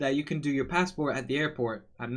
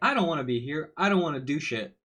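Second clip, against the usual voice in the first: annoyed, pissed-off, fed-up voice. Retelling what a pissed-off clerk said: imitating an annoyed clerk. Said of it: "she was pissed".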